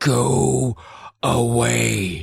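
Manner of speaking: put-on harsh whisper. Retelling how the masked Phantom told Brooke to go away: retelling a harsh whisper. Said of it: "in a harsh whisper".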